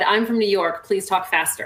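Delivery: ordinary talk, nothing marked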